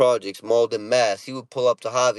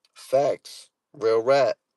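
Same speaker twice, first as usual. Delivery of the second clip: ordinary talk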